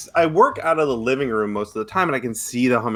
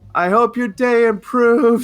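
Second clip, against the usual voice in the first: put-on very high, loud, drawn-out yell; 11 semitones higher, 5 dB louder than usual. Retelling what was yelled on the way out: retelling own loud yell. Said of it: "I yelled just as loud as I could".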